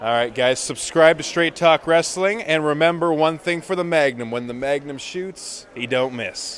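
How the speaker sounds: swaggering, energetic promotional voice. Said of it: "give me that Magnum energy".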